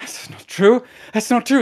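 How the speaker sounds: high, angry, indignant tone, snapping back.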